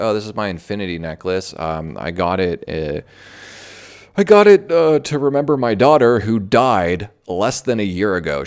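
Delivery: put-on weeping, tearful crying through the words. Retelling a contestant's on-camera interview about her necklace: imitating Charlene crying. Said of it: "she starts crying. She's like".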